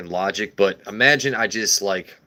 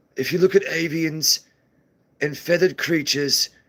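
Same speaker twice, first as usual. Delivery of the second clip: put-on wildlife documentary narrator voice; 7 semitones higher than usual. Explaining the egg and the chicken, saying it in a National Geographic narrator voice. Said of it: "Or I could say it like National Geographic".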